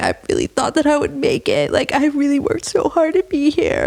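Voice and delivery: play-acted, high, tearful crying lament. Retelling a contestant's words after being cut: imitating someone crying. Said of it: "she's crying".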